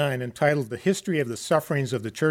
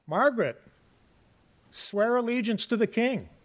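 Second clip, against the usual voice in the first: high, loud shouting; 8 semitones higher than usual. Retelling an officer calling to a woman as the waters rise, shouting. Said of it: "Well, as the waters rose higher and higher, the officer shouted to her".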